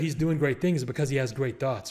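ordinary talk

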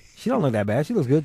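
ordinary delivery

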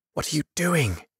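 soft, high half-whisper under the breath. Narrator reading Firian calling to Cademan down the hill, half-whispering. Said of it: "Firian whispered".

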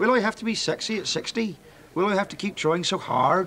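West Country accent, rolled r. Speaker reads one of their own poems aloud in a West Country accent. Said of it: "imagine me like a West Country accent".

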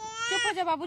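hushing, shushing voice.

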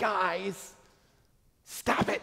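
put-on heavy sigh, then high, rough, strained broken-down cry. Retelling a video where a pastor addresses his congregation: imitating a pastor screaming. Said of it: "breaks down with a heavy sigh and screams".

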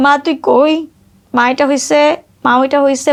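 usual speaking voice

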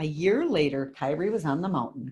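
plain

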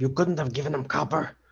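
whispering. In a role-play scene, a character whispers to a companion. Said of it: "I'll whisper to him".

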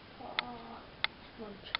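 soft, hushed, quiet talking.

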